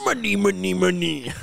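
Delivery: scratchy, rough, creaky cartoon character voice. Trading cartoon impressions, a speaker does a SpongeBob impression. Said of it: "I have a host of SpongeBob impressions".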